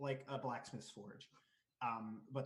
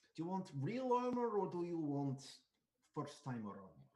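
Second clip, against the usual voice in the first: big, swooping, exaggerated Russian accent; 4 semitones higher, 4 dB louder than usual. Kara asks a first-time customer about armor: Kara's big Russian accent. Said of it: "like big Russian accent".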